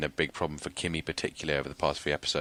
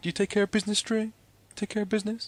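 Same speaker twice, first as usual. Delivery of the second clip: put-on mocking, ironic voice, higher pitch; 3 dB louder than usual. Retelling a scene where Avon mocks someone: imitating Avon's ironic mockery. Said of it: "Avon's all like".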